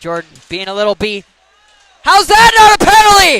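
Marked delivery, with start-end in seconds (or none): 2.0-3.4 very loud, very high yell at full volume. Calling a hockey game, protesting a missed penalty: yelling. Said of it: "As I yell".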